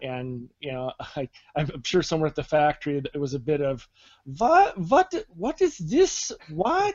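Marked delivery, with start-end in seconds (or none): 4.2-6.9 comic German-officer voice, much higher, slower. Imagining someone at the factory reacting to the settings button, sounding like Colonel Klink. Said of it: "You sounded like Colonel Klink there".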